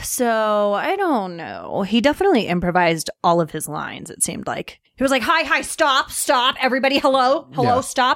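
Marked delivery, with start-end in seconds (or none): 5.2-8.2 mock neurotic ranting, higher. Retelling how an actor improvised his lines: imitating a neurotic character. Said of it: "Really neurotic".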